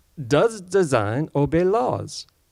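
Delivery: booming, drawn-out, bad fake French woman's accent. Reading a quote that must be said in a particular voice: bad french woman accent. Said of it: "That was my bad French woman uh, imitation".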